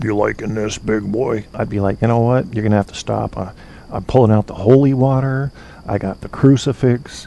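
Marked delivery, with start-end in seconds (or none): 0.0-1.5 low, hushed voice kept down. Imagining some voice saying this to him, the speaker acts it out: low voice. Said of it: "if I heard some low voice go".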